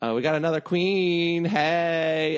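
drawn-out high hey. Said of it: "RuPaul says".

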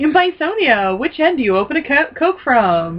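mock public address announcer voice. Quoting the announcer's fun fact at the end: imitating the prison announcer. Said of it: "he's got the fun fact at the end".

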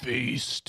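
low, deep, gravelly, raspy voice. Joking about a voice like six packs of cigarettes, deep raspy smoker's voice. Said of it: "like you smoked six packs of cigarettes".

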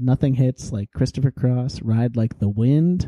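ordinary delivery

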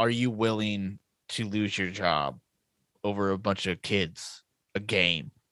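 soft, hushed half-whisper. Retelling a film scene where one character confronts another: imitating a hushed half-whisper. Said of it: "hushed toned, whispered".

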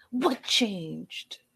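put-on, dramatic pleading tone. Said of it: "he was super dramatic about it".

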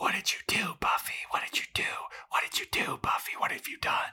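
eerie, accusing, soft, breathy ghostly whisper.

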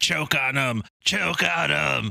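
acted ragged, creaky, high, drawn-out scream of agony. Retelling a movie scene of a man torn apart by zombies: imitating someone screaming. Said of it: "he's screaming as the zombies tear him apart".

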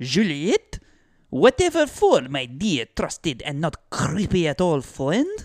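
put-on French father voice, swooping pitch. Acting out Jules answering Deschamps in a skit: Jules voice. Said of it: "convinced Jules to let him borrow Juliet".

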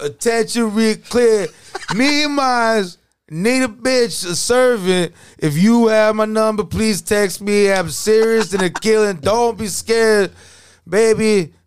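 very high, stretched-out, drawn-out put-on voice. Trying out a best impression, in an NBA voice. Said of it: "I'm gonna try to do my best NBA voice".

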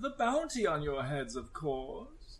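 quiet, matter-of-fact villain voice. In an actual-play game, the narrator voices the dwarf villain answering the party. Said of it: "As [name], it's essentially, he looks like Maxwell [name] from Yu-Gi-Oh, but he's just short because he's a dwarf. / Sitting behind like a gemstone desk, like cards circling around his head, like orbi".

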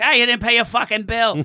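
put-on very high pirate talk with Boston accent. Telling a story about Katie, imitating her like a Boston pirate. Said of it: "I like that you make her sound like a Boston pirate".

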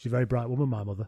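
fast, dry, completely deadpan and matter-of-fact. Retelling a man's interview answer, imitating him completely deadpan. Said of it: "completely deadpan".

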